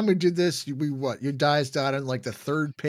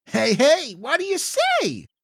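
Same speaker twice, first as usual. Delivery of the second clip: goofy voice, pitched way up, very high, loud; 11 semitones higher, 5 dB louder than usual. Narrating a story, a familiar voice wakes the listener: Todd's goofy voice. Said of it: "Todd's same goofy sounding voice".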